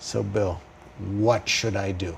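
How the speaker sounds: put-on tired, worn-down, slightly weary, low and soft. Retelling what a man said to him, imitating a slightly weary tone. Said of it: "in a slightly weary tone of voice".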